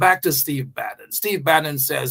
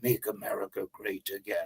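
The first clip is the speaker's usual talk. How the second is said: put-on voice, very low, hushed, barely above murmur; 7 semitones lower, 13 dB quieter than usual. Quoting a political slogan, saying it as a Steve Bannon impression. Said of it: "I had to say it in your voice".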